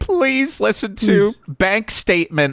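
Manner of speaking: high, drawn-out, blubbering, tearful fake sobbing. Imitating Tony begging people to hear his record: mock crying as Tony. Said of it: "Tony's crying".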